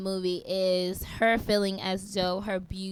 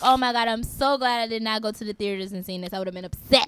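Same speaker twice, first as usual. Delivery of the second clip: ordinary talk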